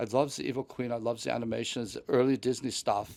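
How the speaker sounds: put-on German accent. Retelling a chat with a random german guy at rope drop, imitating a german accent. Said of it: "His accent was hilarious".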